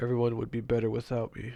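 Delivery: ordinary delivery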